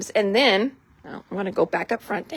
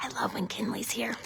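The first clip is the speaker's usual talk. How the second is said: very quiet little whisper, under the breath; 13 dB quieter than usual. Speaking about a crafty assistant who just joined, whispering. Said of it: "I don't know why I'm whispering".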